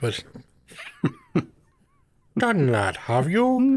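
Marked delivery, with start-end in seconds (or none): 2.4-3.8 very high, swooping, croaky alien voice. Rephrasing a question to the co-host, in Yoda voice. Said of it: "can you do that in Yoda's voice?".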